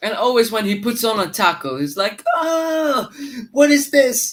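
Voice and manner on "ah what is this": put-on very slow, drawn-out, fed-up, annoyed, high tone. Imitating a footballer complaining after a tackle: imitating Zaha pissed off. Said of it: "the guy is always pissed off when he plays football".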